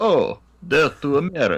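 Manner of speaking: fake Russian accent through fan. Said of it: "heavily modulated, terrible Russian accent".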